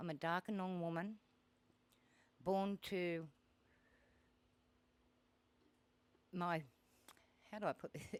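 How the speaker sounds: halting, nervous, hesitant. [name] introducing herself to an audience as a Darkinjung woman, nervous and hesitant. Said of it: "Sorry, I'm nervous".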